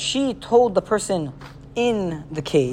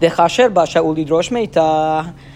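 ordinary talk

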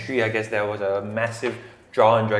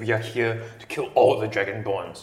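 furious, angry voice. Voicing an angry drow who glares at the interrogator: angry drow voice. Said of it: "he's really angry".

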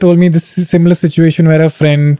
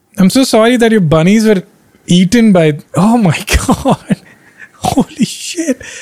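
very slow, stunned, disbelieving laughter; 4 semitones higher than usual. Reacting to hearing someone's bunnies were eaten by cats, laughing in disbelief. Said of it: "I'm not laughing at you".

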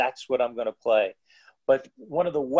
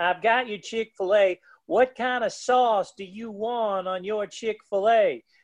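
higher put-on Southern accent, laid on; 7 semitones higher than usual. Retelling a woman bringing lunch to the table, in a southern accent. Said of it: "with a Southern accent".

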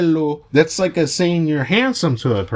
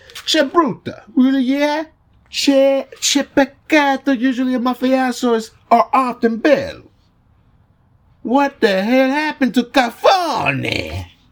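slow, put-on mobster-movie Italian accent; 8 semitones higher than usual. Reading some script aloud for viewers, showing off an italian accent. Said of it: "that really cool ass motherfucking Italian accent".

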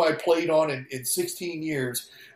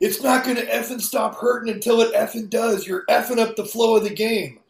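put-on high-pitched screaming, ranting; 6 semitones higher than usual. Retelling a teammate screaming from the dugout: imitating B J Surhoff screaming. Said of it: "B J Surhoff is screaming at me".

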